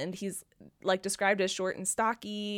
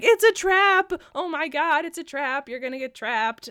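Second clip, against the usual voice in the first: shrill, raised scream; 6 semitones higher, 8 dB louder than usual. Recalling reading it on the couch this morning, the speaker re-enacts their own screaming. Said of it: "like screaming like".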